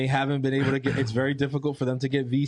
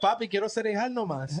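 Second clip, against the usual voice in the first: put-on Paraguayan Spanish accent, higher; 8 semitones higher, 3 dB quieter than usual. Imitating kids who talk with a Paraguayan accent. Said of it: "every time my kids talk with that Paraguayan accent".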